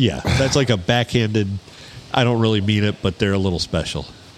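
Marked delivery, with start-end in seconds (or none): none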